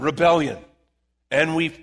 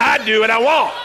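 belted out loud and high with gusto. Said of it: "Say it with some gusto".

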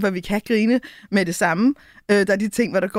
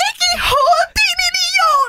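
put-on scream, higher and louder; 5 dB louder than usual. Retelling overhearing a couple through an upstairs window: imitating a woman screaming. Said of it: "Og så skriger hun bare".

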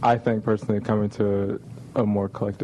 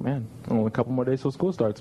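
normal talking voice

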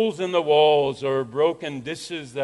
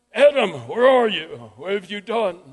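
acted, furious all-out loud high-pitched shout; 5 semitones higher, 4 dB louder than usual. Retelling how some students shouted the question at Adam: imitating a loud angry shout. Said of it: "in the loudest, angriest voice they could register, they would shout".

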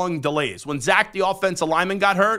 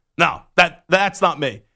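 ordinary delivery

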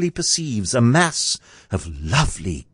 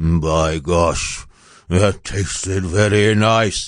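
muttering, much slower; 6 semitones lower than usual. Narrator reads the giant's words heard from high above the ground: muttering. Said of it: "He heard the giant mutter twice".

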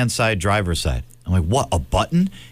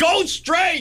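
shrieking, very high scream. Retelling your father during your first interstate merge on a learner's permit, retelling a scream. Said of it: "as he's screaming".

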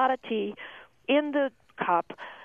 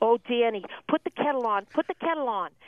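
put-on grandmother voice. Retelling what the grandmother said when someone was about to cry: imitating Grandma O'Shaughnessy. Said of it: "Then you would hear my grandmother say".

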